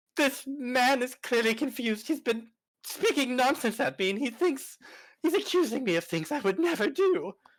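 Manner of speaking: very high-pitched pleading. Voicing a character pleading with the other guards: pleading with the guards. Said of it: "I'm gonna plead to the other bluecoats".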